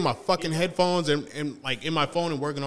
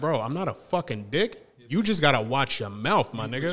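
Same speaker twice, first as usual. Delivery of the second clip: normal talking voice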